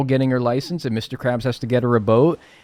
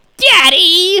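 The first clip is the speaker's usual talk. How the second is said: shrill, very loud, high, obnoxious shriek; 9 dB louder than usual. Pitching a cartoon episode idea, Pearl asks her dad: obnoxious Pearl voice. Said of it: "in that fucking obnoxious voice of hers".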